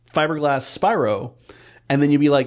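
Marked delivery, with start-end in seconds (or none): none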